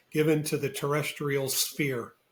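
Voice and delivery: ordinary talk, nothing marked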